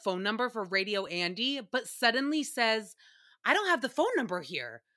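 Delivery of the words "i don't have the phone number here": rushed, with a hint of panic. Retelling how a radio host suddenly lacked the phone number, mock slight panic. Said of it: "there was a slight panic to his voice".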